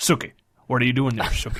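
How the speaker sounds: put-on American character voice. Discussing accents from True Blood, doing the Bill from True Blood voice. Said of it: "when we turn into Bill".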